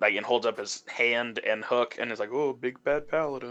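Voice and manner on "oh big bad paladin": muttered under breath, quieter, slower. Retelling what a character said to a paladin during the game: muttered under his breath. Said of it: "he under his breath is like".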